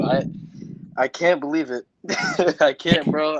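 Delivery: slow, tearful speech, talking through crying. Reacting to a favorite wrestler winning the title, crying while talking. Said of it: "I'm still crying right now".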